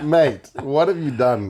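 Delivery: words broken by laughter. Retelling a teammate laughing at another player's mistake: imitating someone laughing while talking. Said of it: "he's just laughing at".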